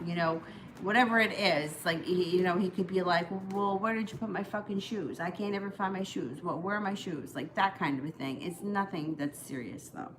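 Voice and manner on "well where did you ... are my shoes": normal talking voice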